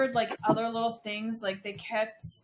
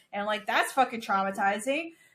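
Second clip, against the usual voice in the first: usual speaking voice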